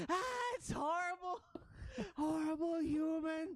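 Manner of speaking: very high, loud horrified rat-like scream. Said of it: "All the rats scream".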